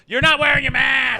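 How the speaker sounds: very high, loud, shrill nagging yell. Imitating the others who scold anyone out of the herd: imitating people yelling. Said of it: "they start yelling".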